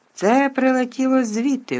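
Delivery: shrill, very high, alarmed outcry. Malfoy points out where the mud came from, exclaiming. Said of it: "вигукнув Малфой".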